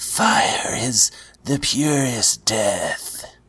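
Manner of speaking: very slow delivery with every word stretched. Retelling a scene where Melisandre whispers in Davos's ear: imitating Melisandre whispering. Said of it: "she whispers in his ear".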